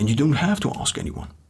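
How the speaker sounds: usual speaking voice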